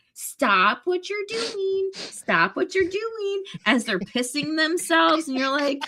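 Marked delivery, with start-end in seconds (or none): 0.1-3.4 put-on high, slow voice of a three-year-old. Imitating a little three-year-old repeating a potty rule: imitating a little three-year-old. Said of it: "a little three-year-old ... they're going".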